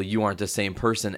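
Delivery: ordinary talk, nothing marked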